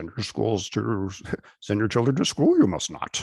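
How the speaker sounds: high alien voice with inverted word order. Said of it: "I was going to do it in Yoda voice".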